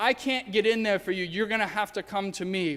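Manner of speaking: ordinary talk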